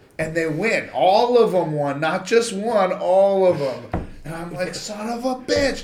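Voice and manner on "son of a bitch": mock mad, frustrated, high angry cursing outburst. Retelling losing a race to young girls: imitating own angry outburst. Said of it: "I'm so mad".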